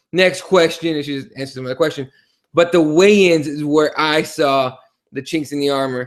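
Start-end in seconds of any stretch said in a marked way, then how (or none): none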